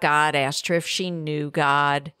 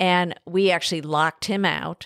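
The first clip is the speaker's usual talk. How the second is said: normal talking voice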